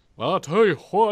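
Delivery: weak, high Texan accent. Mocking another speaker's accent attempt, the speaker does a lame Hank Hill impression. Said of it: "attempt at trying to impersonate Hank Hill".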